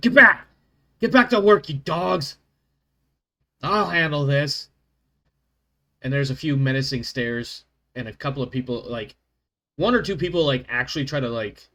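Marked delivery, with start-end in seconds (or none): 0.0-4.7 very loud, pitched-up, bellowing yell. Voicing a hammer-carrying leader who pushes people aside: yelling commanding character. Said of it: "he yells at 'em all".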